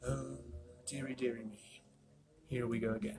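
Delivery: murmuring softly under breath. Reading a story aloud, Mister Wonka despairs quietly: murmuring softly under his breath. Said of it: "murmuring softly under his breath".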